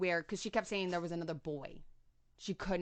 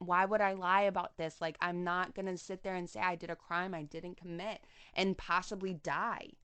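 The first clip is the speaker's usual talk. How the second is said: ordinary delivery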